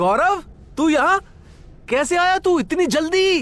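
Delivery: called out in a high voice. Shaken awake after an accident, a man speaks to the one who woke him, shouting. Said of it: "आप इतना चिल्ला क्यों रहे हो?".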